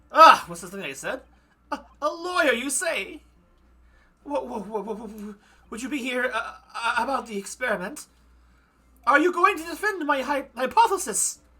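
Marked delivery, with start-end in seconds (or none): 1.7-11.3 stuttering, halting professor voice, pitched up. Voicing Professor Harebrain, who is asked by a defense lawyer: Professor Harebrain voice. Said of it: "what kind of voice to give this guy".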